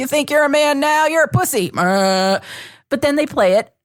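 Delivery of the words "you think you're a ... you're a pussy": pitched-up, jeering, mocking taunt. Retelling a violent video of attackers taunting a beaten man: imitating mocking attackers in a video. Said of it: "That's a pretty good impression of that video".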